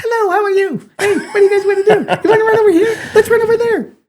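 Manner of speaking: squeaky little puppy voice, very high. Describing his little spaniel, the speaker gives the dog a voice: voicing Rudy the puppy. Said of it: "If you gave Rudy a voice".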